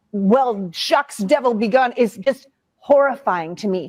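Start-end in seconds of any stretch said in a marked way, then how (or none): 0.2-2.0 offhand, flippant, mocking, dismissive tone. Mocking the other speaker's attitude right now: imitating a dismissive attitude. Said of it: "your sort of like".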